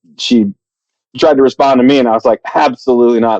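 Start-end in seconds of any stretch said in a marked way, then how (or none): none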